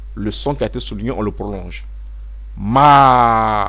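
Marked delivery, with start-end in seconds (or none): 2.6-3.7 ma starting strong, then falling. A French-language tone lesson showing how to say the syllable: falling tone on ma. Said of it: "On baisse, on commence fort, puis on baisse".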